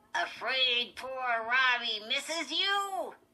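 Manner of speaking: loud, high, squeaky ventriloquist-dummy voice. Narrator reads Lindy voicing her dummy to Chris, squeaky Slappy dummy voice. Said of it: "Slappy said in Lindy's squeaky voice".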